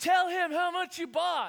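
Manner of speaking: very high, shrill, loud shouting. Retelling how a friend yelled from halfway down the stairs: imitating someone yelling. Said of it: "And then he yells".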